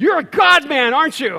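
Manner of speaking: sudden, blurted-out, high, loud yell. Retelling a man who asked what the speaker writes, imitating him yelling out. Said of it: "he yells out".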